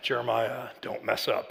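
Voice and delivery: very deep, creaky, hushed, menacing murmur. Recalling a billboard from his youth, the speaker imagines it warning him by name: put-on ominous voice. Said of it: "Like the ominous voice".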